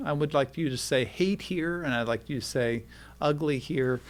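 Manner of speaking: ordinary talk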